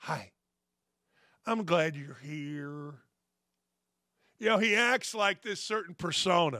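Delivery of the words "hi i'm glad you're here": slow, low, soft creepy voice. Speaker imitates a man greeting someone at a press conference, creepy voice. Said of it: "My creepy voice".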